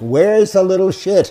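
mock very high, shrill yell. Retelling how Davis looked around after the shoot, retelling Davis's yell. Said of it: "yells out in the same tone of voice".

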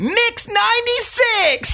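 put-on shrill, super-loud, high-pitched shout. Recounting answering callers who asked who the tickets were won from: retold super loud. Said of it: "like super loud".

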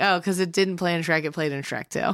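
normal talking voice

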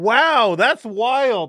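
high, sarcastic tone of mock wonder.

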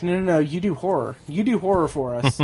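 ordinary talk

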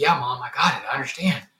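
acted, tearful voice, speaking through tears. Recalling his reply to his mom, retelling speaking through tears. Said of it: "through the tears".

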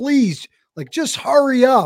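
high-pitched, mild, held-back mock scream. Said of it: "you wanna just scream".

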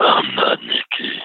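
very deep, very low, gargly, terrifying growl. Retelling what an unseen voice said: imitating a deep gargly terrifying voice. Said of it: "I can hardly imitate it".

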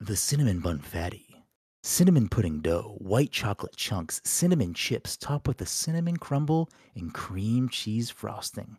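radio announcer voice, ad-read style. Doing an advertising read for a listener in an NPR voice. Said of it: "This is my NPR voice".

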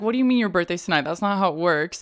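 ordinary talk

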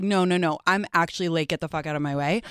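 ordinary delivery

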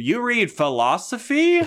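very high-pitched, swooping, sing-song delivery. Retelling a movie scene, quoting the character Misha: mocking Misha's "charismatic" line delivery. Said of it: "with her great charismatic delivery".

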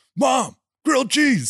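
grating, very high-pitched, loud insistent voice. Tutor recalls a student asking his mom for grilled cheese; Will Ferrell-like grating demand. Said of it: "in a tone of voice that like made my skin crawl".

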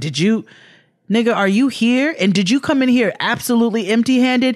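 put-on judgmental tone. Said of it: "like, a judgmental tone".

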